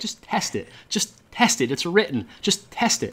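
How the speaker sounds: imploring, pleading voice. Retelling asking the boss to test the sales letter: retelling own begging plea. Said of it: "I'm begging".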